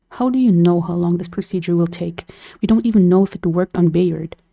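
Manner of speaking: ordinary talk, nothing marked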